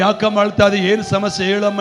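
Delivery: ordinary delivery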